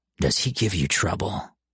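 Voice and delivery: low, soft voice. Narrator reads a character questioning Mom about the boy, in a low, warning voice. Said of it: "in a low, warning voice".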